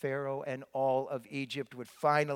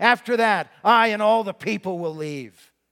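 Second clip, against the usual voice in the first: furious angry outburst, very loud and high; 7 semitones higher, 14 dB louder than usual. A storyteller voicing a man's final warning to Pharaoh, in a raised, furious voice. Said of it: "I'm raising my voice as I say this".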